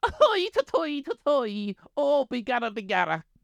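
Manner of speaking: stretched, high-pitched Irish accent. Joking about how others hear an Irish voice, doing a Conor McGregor impression. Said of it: "here's my impression of Conor McGregor".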